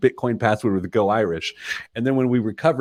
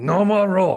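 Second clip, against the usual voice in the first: raised, pitched-up puppet monster voice; 9 semitones higher than usual. Retelling what Dikembe told a child at dinner: Dikembe voice like Cookie Monster. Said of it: "because he sounds like Cookie Monster".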